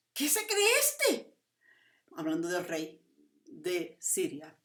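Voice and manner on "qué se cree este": high, slow shrieking yell. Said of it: "y chilla y grita y dice".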